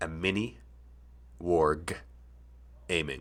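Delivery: warg with rising pitch, pause, then aiming.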